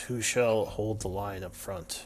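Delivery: soft half-whisper in a character voice. Voicing a character who asks the party who leads: half-whispering in character. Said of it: "she whispers".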